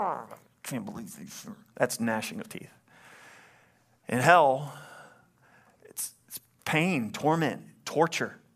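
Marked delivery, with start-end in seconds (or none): 0.0-1.5 much quieter dog-like growling. Explaining gnashing of teeth, showing someone really angry; growling like a dog. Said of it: "like a dog growling".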